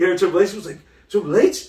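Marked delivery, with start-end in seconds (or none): 1.1-1.7 acted excited outburst, higher and louder. Retelling a tv episode where the nephew hears triple h: imitating someone hyped. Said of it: "He got dumb hype".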